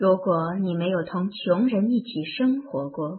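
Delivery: ordinary delivery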